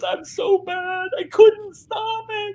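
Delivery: very high, slow, drawn-out sobbing wail. Retelling a first grader's apology after drawing on the car: imitating Claire sobbing. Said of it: "sobbing, crying".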